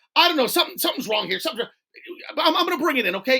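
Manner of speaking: frantic, fast and high, tripping over the words. Retelling a customer calling about a broken computer: imitating a frantic caller.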